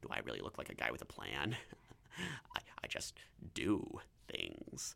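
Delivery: breathy, hushed, whispered villain voice. Talking about dressing up as the Joker, attempting the Heath Ledger Joker voice. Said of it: "Let me see if I can remember how to do it".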